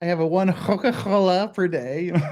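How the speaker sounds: slight Scouse accent. Asked to say it again, the speaker repeats the line slightly Scouse-sounding. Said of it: "it sort of sounded a bit scousy".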